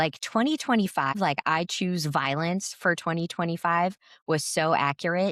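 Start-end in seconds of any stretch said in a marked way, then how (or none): none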